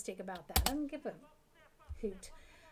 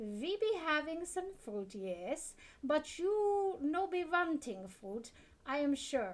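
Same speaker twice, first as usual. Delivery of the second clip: clumsy put-on German accent, pitched up; 6 semitones higher than usual. Playing a shopkeeper showing what's in stock, in a put-on German accent. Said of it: "this is their impression of a German".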